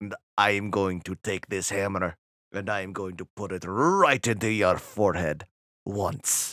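put-on big, laid-on Russian accent. Quoting a tv show character who threatens with a hammer: big russian accent. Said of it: "this big Russian accent".

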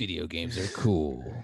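deep, dramatic, epic movie-trailer narrator voice. Imitating the guy who always announces the nominees: imitating epic voice guy. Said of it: "Epic voice guy".

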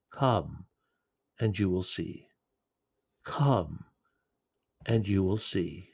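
quiet, tender delivery. A speaker retelling the words of Jesus, quoting softly and lovingly. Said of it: "Jesus simply says quietly and lovingly".

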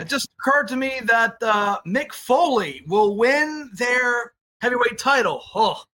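slow, high-pitched ringside announcer delivery. Answering a trivia question about a wrestling announcer's quote: Tony Schiavone voice. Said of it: "in my best Schiavone voice".

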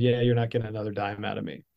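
ordinary delivery

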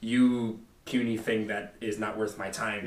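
ordinary delivery

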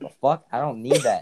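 put-on offended indignation.

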